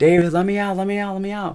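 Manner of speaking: shrill, very high, desperate scream. Retelling a show scene, a character trapped inside another's body: imitating someone screaming. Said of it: "screaming, like".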